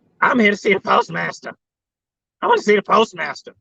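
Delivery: full-on, over-the-top put-on crackhead voice. Retelling what a woman at the window said, in her crackheadiest voice. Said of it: "in her crackheadiest voice".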